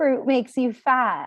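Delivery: deliberately irritating put-on voice, high-pitched. Speaker lists claims people make about fruit, in a mock annoying voice. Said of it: "I have to say it in this annoying voice".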